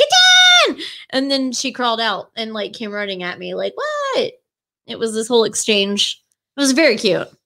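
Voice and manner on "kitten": shrill, piercing scream, very high and loud. Retelling calling out for her kitten, retelling screaming for a kitten. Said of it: "I yelled for her and I screamed".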